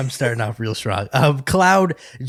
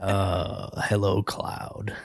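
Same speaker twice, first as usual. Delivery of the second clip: hushed, breathy, soothing villain whisper; 4 semitones lower, 9 dB quieter than usual. Imitating how the game villain greets Cloud: imitating a soothing villain voice. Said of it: "It's just really nice and soothing".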